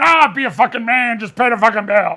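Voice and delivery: put-on voice of a sixty-year-old person. Imitating the sixty-year-olds scolding the younger generation: imitating a sixty-year-old. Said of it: "The sixty-year-olds are going".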